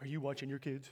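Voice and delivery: rude, unkind, unfriendly tone. Retelling a stranger at the pool questioning them, mimicking a not-so-nice voice. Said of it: "asked me in a not so nice voice".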